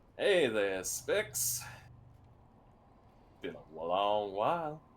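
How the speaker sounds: coy vampire character voice. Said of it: "A bright and coy smile".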